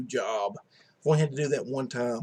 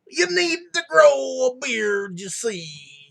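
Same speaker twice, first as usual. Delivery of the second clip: very high, loud, raspy put-on voice; 12 semitones higher, 5 dB louder than usual. Joking that Cosby tells the kids to grow a beard: Bill Cosby voice. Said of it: "I just did the Cosby voice".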